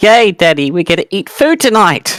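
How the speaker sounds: put-on very high, piping little girl voice. Voicing a girl's voice coming out of a character's mouth: girl's voice. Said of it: "he hear a girl's voice commenting".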